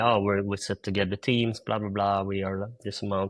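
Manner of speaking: ordinary talk, nothing marked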